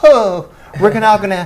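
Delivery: high, mock wimpy guy voice. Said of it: "some fucking wimpy guy going".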